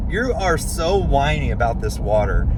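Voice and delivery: ordinary talk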